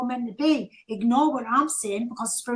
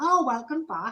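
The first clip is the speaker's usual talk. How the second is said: acted-out dry sarcastic tone, meaning the opposite. Describing what the speaker's guides say after a week away, imitating a sarcastic tone. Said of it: "in a sarcastic tone".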